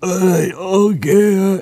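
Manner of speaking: high voice with the word okay drawn out. Commenting on the primary results, imitating Joe Biden. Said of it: "you give Joe Biden a chance just to go".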